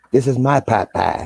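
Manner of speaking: high, drawn-out cartoon voice. Retelling a brother's joke at his wedding reception: Cartman voice. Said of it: "And he says it like Cartman".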